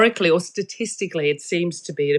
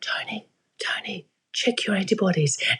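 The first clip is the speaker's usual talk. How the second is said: hushed whisper, quieter; 6 dB quieter than usual. Speaker gives voice to the body speaking to a person: whispering. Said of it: "the body whispers".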